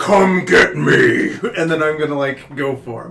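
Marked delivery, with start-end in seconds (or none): 0.0-1.3 loud, creaky, gritty, rough, taunting snake voice. Voicing a giant snake taunting the party: deeper snake voice. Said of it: "its voice gets deeper".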